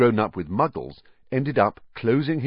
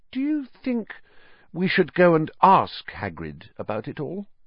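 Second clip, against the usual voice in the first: halting, hesitant, unsure, slightly raised pitch; 7 semitones higher than usual. Narrator reading Hermione's question to Harry and Ron, in a hesitant voice. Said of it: "in a hesitant voice".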